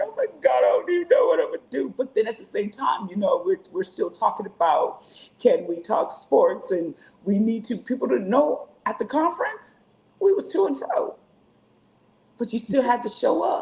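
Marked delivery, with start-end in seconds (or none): 0.0-1.9 high, tearful crying, pitched way up. Retelling calling a friend in a hard time, imitating own past crying. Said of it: "I'd call her crying".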